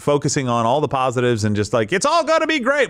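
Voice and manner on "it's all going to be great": salesman patter with the voice pitched way up. Mocking a businessman pitching AI, like a salesman: imitating Kevin O'Leary as salesman. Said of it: "he sounds like a salesman".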